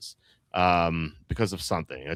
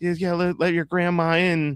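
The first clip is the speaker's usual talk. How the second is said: put-on very high, coaxing old woman pleading voice; 11 semitones higher than usual. Retelling a show's opening scene, an old woman at the window: imitating an old woman pleading. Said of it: "She's like".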